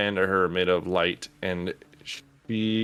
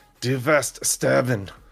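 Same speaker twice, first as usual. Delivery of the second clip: furious, raised pitch, spoken through clenched teeth; 5 semitones higher, 3 dB louder than usual. Voicing a foe after the first two swings at her miss: angry, through gritted teeth. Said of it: "angrily looks at you, and she just, like, grits at her teeth".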